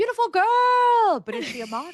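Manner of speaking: celebrity impression, loud, high-pitched, girl stretched long. Joking about answering a comment by talking in a Tyra Banks voice. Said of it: "talk like Tyra Banks".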